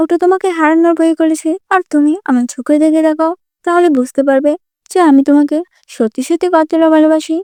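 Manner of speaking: ordinary delivery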